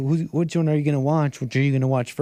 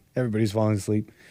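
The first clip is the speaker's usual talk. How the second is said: ordinary delivery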